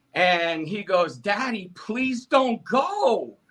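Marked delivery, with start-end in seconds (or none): 1.2-3.3 put-on tearful child voice, high, slow, pleading. A dad retells his young son begging him not to leave, imitating Caleb crying. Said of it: "he's crying real tears".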